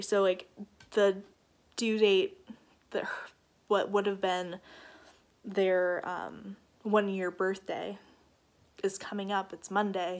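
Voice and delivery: fighting back tears, tearful held-back delivery. Speaker telling their audience about an approaching due date, holding back tears. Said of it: "I'm trying not to cry right now".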